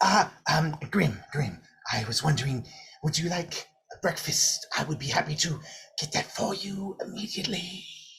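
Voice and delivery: timid, nervous, intimidated little lizard creature voice. Voicing a little lizard that the player has intimidated: intimidated lizard voice. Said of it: "this little lizard that you have intimidated, Grim, kind of comes up to you and goes".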